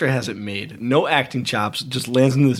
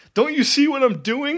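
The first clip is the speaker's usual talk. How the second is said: put-on, very high, shrieked-out screaming; 13 semitones higher than usual. Retelling a scene where a man screams at people; imitating someone screaming. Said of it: "He's screaming at you".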